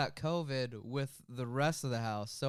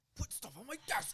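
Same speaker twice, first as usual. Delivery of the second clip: airy, breathy whispered mutter; 9 semitones higher, 8 dB quieter than usual. Doing a quick impression of Jake, who is off camera: imitating Jake Ford. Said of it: "That's my impression of Jake Ford".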